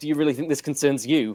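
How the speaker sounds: ordinary talk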